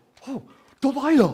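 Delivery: put-on British accent, very high and very loud. Retelling walking up to a woman named delilah: british accent. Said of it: "in my British, British".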